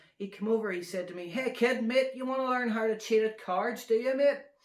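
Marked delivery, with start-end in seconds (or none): 1.3-4.4 poor, bad fake American accent, loud. Speaker retells what an American guy said to them, bad American accent. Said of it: "I can't do accents".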